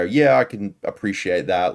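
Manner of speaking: ordinary talk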